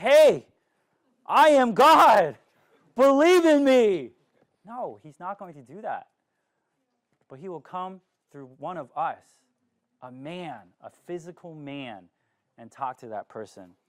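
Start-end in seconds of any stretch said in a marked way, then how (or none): 0.0-4.1 slow, loud, booming, lofty, high, drawn-out delivery. Speaker imagining God calling out to people directly, booming God voice. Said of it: "in a booming voice".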